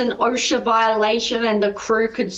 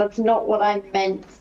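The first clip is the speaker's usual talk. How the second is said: fed-up, frustrated, exasperated tone. Rubbing the brows while answering a companion: frustrated. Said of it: "rub my brows in frustration".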